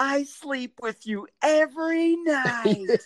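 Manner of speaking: acted, very high, very slow, loud, drawn-out drunken yell. Retelling what a woman who came up to him called out, imitating a woman yelling. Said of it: "yells, or she kind of says my name really loud".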